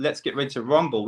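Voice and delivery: ordinary talk, nothing marked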